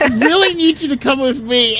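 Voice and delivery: put-on jittery, nervous voice, pitched very high. Retelling a scene where a kid asks someone to follow: imitating Slightly shaking and sweating. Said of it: "shaking and sweating".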